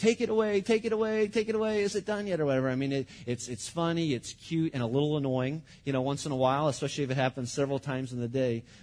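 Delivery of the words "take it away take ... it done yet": put-on acted, high, frightened child's scream. Retelling a two-year-old's panic at sirens: imitating Kate screaming. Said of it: "she's screaming".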